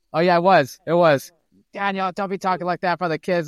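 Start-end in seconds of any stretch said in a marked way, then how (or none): 1.8-3.5 mock yelling, high-pitched. Recalling an old school Boston guy's home, retelling the wife yelling. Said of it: "the wife would start yelling".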